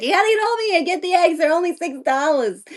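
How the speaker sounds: put-on high-pitched Jersey accent. Acting out calling all their friends about a cheap sale: part Jersey, part Fran Drescher voice. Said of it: "part Jersey and part Fran Drescher".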